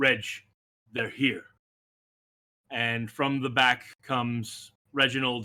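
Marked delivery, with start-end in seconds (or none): 0.0-1.4 firm, stern, no-nonsense call. Narrator voicing the dragonborn Suma calling to Reg: Suma's soft but stern call. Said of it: "out softly but with a stern voice".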